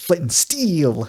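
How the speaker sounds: odd stress on flint, steel. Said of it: "with this weird, like, emphasis on, uh, on certain words".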